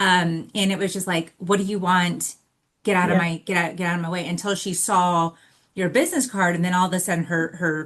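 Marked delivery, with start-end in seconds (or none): 1.4-4.3 mock rude, annoyed, irritated, dismissive voice. Retelling how a staff member brushed off a visitor: imitating a rude, annoyed receptionist. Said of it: "it was clear you were bothering her".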